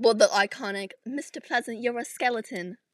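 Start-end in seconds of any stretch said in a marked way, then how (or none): 1.1-2.8 put-on British accent. Quoting a book line as Valkyrie: Valkyrie in British accent. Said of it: "Valkyrie doesn't sound like that. She's Irish, not British".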